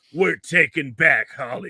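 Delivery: deep voice dropped one octave. Acting out a guy in front of the camera, speak with your voice dropped an octave. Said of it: "drop your voice one octave and go".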